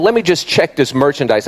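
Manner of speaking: ordinary talk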